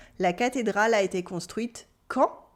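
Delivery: ordinary talk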